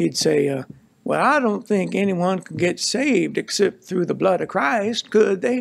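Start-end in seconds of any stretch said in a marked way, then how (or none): 1.0-5.6 rough attempt at a Southern US accent. Speaker retelling what Paul said in their conversation, imitating Paul's Southern accent. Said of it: "a Southerner, so my accent might not be very good".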